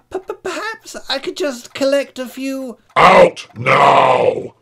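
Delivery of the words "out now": very loud, drawn-out dragon roar. Narrator reading a story, the new dragon chasing the other from the cave: roared. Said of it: "Roared the other dragon".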